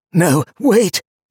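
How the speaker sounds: hoarse, raspy whisper. A stranger, a traveler, calls out to Donia, in a hoarse whisper. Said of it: "he said, in a hoarse whisper".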